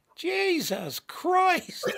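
put-on very high little kid's outburst. Retelling a four-year-old yelling on a sideways train ride: imitating Sage's four-year-old voice. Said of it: "four-year-old voice go".

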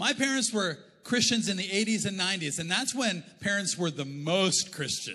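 normal talking voice

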